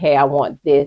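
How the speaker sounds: normal talking voice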